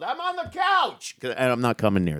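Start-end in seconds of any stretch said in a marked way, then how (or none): 0.0-1.2 animated yelling with swooping pitch. Retelling his answer from the couch when asked where the dad was, retelling his own yell. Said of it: "And I just yelled".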